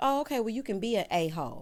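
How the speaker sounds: normal talking voice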